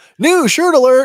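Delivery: way too loud, very high-pitched shout. Announcing a new shirt to viewers, a way too loud shout. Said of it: "that was way too loud".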